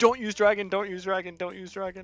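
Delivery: high, loud shout. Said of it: "Then I was like".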